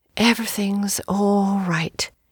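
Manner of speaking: in a whisper. A woman in a carriage repeats a man's soothing reassurance, whispering. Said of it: "she repeated in a whisper".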